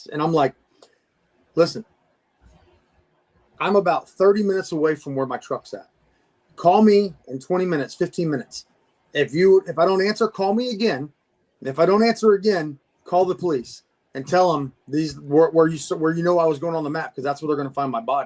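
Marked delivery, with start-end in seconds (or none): none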